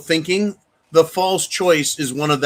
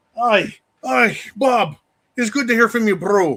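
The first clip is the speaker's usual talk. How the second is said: bad, fake put-on Scottish accent; 6 semitones higher than usual. Host greeting a viewer from Scotland who sent a super chat, terrible Scottish accent. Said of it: "I have a terrible Scottish accent".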